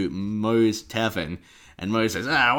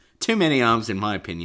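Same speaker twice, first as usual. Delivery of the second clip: normal talking voice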